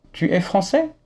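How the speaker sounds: français with question-like tune, rising high at the end.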